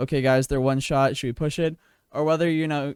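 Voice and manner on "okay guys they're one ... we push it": flat, level, uninflected monotone. Imitating someone sitting there talking to the guys, in a flat monotone voice. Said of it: "talking in a monotone voice".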